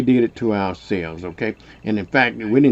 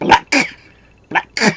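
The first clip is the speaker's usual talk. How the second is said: put-on, word forced out as if spat; 12 semitones higher, 4 dB louder than usual. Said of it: "she used to say it like she's trying to spit it out of her mouth".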